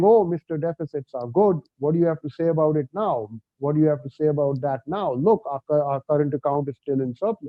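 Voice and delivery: normal talking voice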